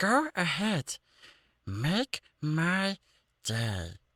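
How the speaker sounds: very high, slow, drawn-out, swooping cartoon alien voice. Redoing the line after feedback from the others: Stitch voice. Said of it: "we'll just go with Stitch for it then".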